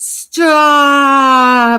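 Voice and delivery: very loud, shrill, high, drawn-out panicked yell. Retelling stopping him from using flea collars on the dogs, reenacting a panicked shout. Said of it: "I'm freaking out".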